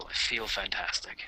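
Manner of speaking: speaking quietly. Answering a tired character's remark in character: speaking quietly. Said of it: "I say quietly".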